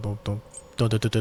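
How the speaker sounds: stuttering. Explaining repair skill points while playing a game, stuttering. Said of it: "sorry, I'm kind of stuttering".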